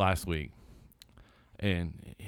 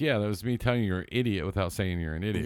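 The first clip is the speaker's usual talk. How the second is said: usual speaking voice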